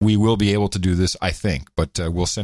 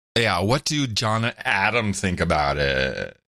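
scornful put-on disdain with creaky vocal fry. Coached to redo a quote with maximum disdain, mock-disdainful with vocal fry. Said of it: "you got the vocal fry in there".

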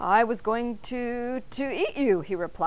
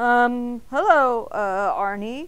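stammering, louder; 2 semitones higher, 6 dB louder than usual. Narrator reads mr. bing greeting arnie, stammering. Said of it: "Mr. Bing stammered".

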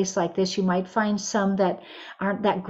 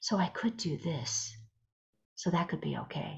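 slow whisper with the voice still sounding; 2 semitones lower, 12 dB quieter than usual. Showing listeners a gentler way to whisper: voiced whisper. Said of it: "a voiced whisper".

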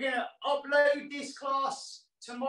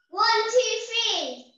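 big loud voice; 9 semitones higher, 7 dB louder than usual. Asked to count to three in a big loud voice before goodbye, counting loudly. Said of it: "With a big loud voice".

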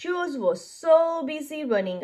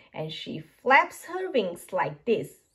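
ordinary delivery, nothing marked

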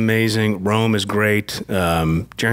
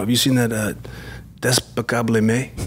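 rising, questioning intonation. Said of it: "He's like".

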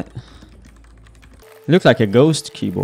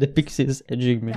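plain

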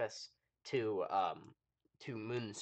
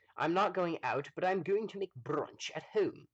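put-on British accent, pitched up; 8 semitones higher, 4 dB louder than usual. Talking to an audience, doing a put-on British accent. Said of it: "I'm doing a British accent".

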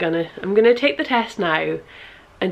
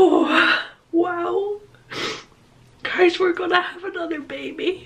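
very high, drawn-out, overwhelmed excitement; 11 semitones higher than usual. Addressing viewers while taking a test alone, overwhelmed with excitement. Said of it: "I've calmed down a bit now".

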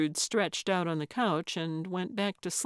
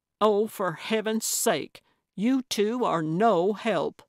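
ordinary delivery

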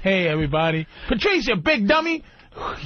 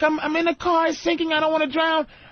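put-on panicking little girl voice, higher; 9 semitones higher than usual. Retelling a little girl's emergency call from a sinking car: imitating a panicking little girl. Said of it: "This little girl's like".

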